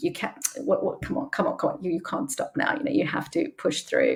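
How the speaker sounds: hushed, whispered, quiet self-encouraging tone.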